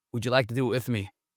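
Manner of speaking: normal talking voice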